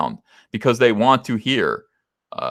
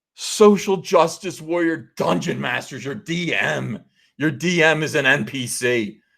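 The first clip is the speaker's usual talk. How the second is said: high, frustrated, exasperated shouting; 6 semitones higher than usual. Reacting to a guide for social justice warrior dungeon masters: yelling. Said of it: "Sorry for yelling".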